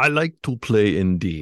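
clumsy, horrible put-on German accent. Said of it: "That's a horrible, horrible".

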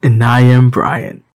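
very loud, blaring, booming into the mic. Podcast intro, introducing himself as Brian after the co-hosts, very loud. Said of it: "My ears!".

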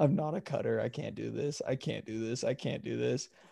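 acted, on the verge of crying. Retelling a caught line cutter walking back: imitating someone almost in tears. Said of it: "almost in tears".

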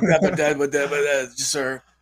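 slow, tongue-tied, starstruck, stammering babble. Imitating a friend meeting his hero: stammering starstruck fan. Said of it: "see Chuck go in donkey mode".

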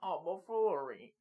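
put-on thin, whittled old man voice. Mocking a coach calling the plays, old-man voice as Jim Zorn. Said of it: "he just talks in this old man, whittled voice".

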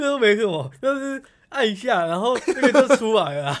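very loud, smug, cocky know-it-all bragging. Retelling how 阿良 bragged about using the copier: smug imitation of 阿良. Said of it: "然后我用他的语气".

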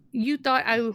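plain

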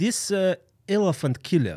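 put-on super thick Russian accent. Retelling what a man said about the large revolver, in a thick Russian accent. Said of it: "he had a super thick Russian accent".

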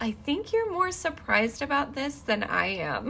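calm, quiet, easygoing speech through a chuckle. Speaker retelling a man's reply to her disbelief, imitating a calm chuckle. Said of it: "chuckled, like, just calmly".

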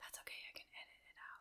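very soft whisper. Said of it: "Why are we whispering?".

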